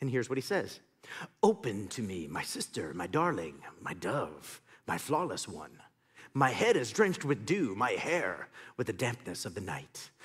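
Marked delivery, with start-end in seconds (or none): 1.4-10.1 low, creepy voice. Reading aloud the man's lines from a chapter and verse, in a creepy voice. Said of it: "don't use the creepy voice".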